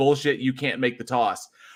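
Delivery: ordinary delivery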